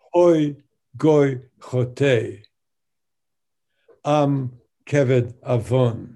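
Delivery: very slow, loud, split into halves at "chote". Reading a line from the first chapter, pause after chote. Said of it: "I'm going to pause between the two halves of the line".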